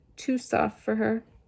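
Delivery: ordinary delivery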